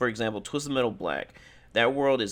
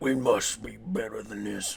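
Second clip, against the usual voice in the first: terrible, badly done rough, creaky voice; 3 dB quieter than usual. Quoting a game character's line in a recap: terrible Kratos voice. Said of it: "That's a terrible voice".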